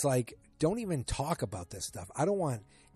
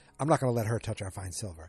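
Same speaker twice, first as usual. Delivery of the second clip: usual speaking voice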